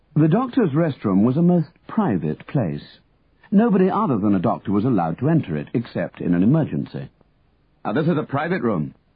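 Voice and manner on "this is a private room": sharp, cutting, sharply spoken delivery. A doctor addresses a man bursting into the doctors' rest room; said sharply. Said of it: "Dr Macfarlane said sharply".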